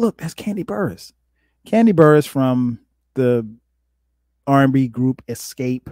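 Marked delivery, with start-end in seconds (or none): 0.0-1.1 put-on whisper, pitched higher and quieter. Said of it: "she whispers, she's like".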